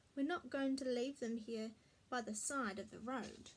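plain reading voice

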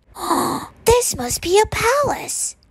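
very high, drawn-out gasping words. Narrating a character's line on seeing rows of furniture, gasping. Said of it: "Corduroy gasped".

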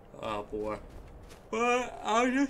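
words pushed through a very high yawn. Recording a game playthrough on a work night after a long day, yawning while talking. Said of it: "sorry, I'm yawning".

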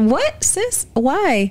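high, alarmed, shocked disbelief.

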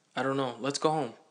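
firm, insistent, pressing tone. Told a boy wants to beat you up, you urge going home, insistent. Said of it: "I said insistently".

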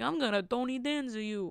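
put-on slow, drawn-out, heavy Italian accent. Retelling a joke once said to a sister: Tony Danza voice. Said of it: "In the Italian voice".

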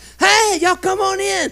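acted, very loud, very high, booming voice. Retelling how a woman's husband greeted the speaker's group, a loud greeting. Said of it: "greeted us with a real loud voice".

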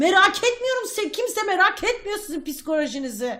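irritated, snapping tone. A speaker talking about their low mood, suddenly angry. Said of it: "Niye sinirlendim durun".

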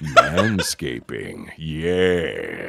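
crazy, dark, very low, creepy voice. Describing the voice in an audio file someone received, crazy, dark, creepy voice. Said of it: "this crazy, dark, creepy voice saying".

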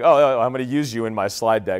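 ordinary delivery

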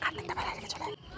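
very soft, sneaky whisper, like a thief.

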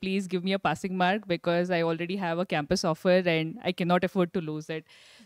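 ordinary talk

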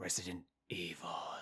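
low, hushed whisper.

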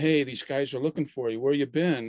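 mild calling out. Retelling someone at a convention calling out: imitating someone yelling. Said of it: "somebody yelled out".

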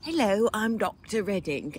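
soft, teasing, put-on British accent. Mocking the other speaker's teacher voice, which the speaker always makes British: British Dr. Redding voice. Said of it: "I make it British".

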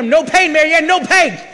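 slow, loud, bellowing, drawn-out high yell. Recounting pushing a tired woman up a mountain, retelling a scream. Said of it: "And I'm screaming at her up the mountain".

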